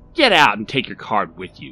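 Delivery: loud, scornful, contemptuous sneering tone. Barry throws Rodney out: sneering. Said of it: "sneered Barry".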